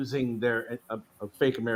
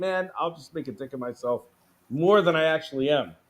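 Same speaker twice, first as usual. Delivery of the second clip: ordinary talk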